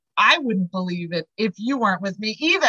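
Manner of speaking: ordinary talk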